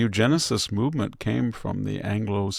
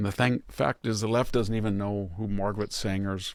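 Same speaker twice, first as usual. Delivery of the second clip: ordinary talk, nothing marked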